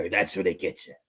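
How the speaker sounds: very low, soft, deepened voice. Speaker retelling what a man says, imitating a deepened voice. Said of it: "he deepens his voice when he says it".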